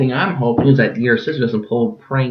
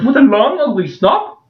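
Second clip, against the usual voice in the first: fake British voice, higher and louder; 13 semitones higher, 5 dB louder than usual. Joking while someone swings a butter knife: put-on british accent. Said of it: "Great British voice".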